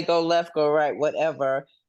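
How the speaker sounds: plain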